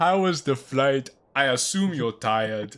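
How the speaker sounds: cartoon lemur king character voice and accent. Reading Julian's lines in a King Julian voice. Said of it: "How does like King Julian sound from Madagascar".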